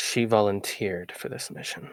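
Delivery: soft, breathy, very close whisper. A player's character leans forward to answer a stranger, whispering. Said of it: "lean forward and like whisper".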